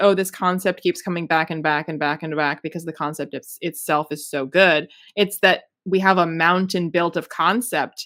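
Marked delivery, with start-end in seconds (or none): none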